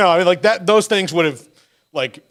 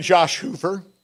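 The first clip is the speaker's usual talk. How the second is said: cracking, breaking voice. Listing Big 12 quarterbacks by rank; voice cracking. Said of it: "my voice broke when I said that".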